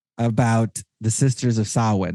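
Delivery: ordinary delivery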